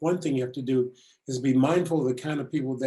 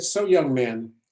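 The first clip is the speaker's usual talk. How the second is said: ordinary talk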